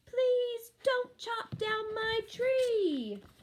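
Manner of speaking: tiny, very high little man shout, last word stretched. A wee little man in a tree shouts at the woodcutter, little voice shouting. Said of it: "the little voice shouted again".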